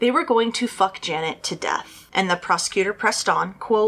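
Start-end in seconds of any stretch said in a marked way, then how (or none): none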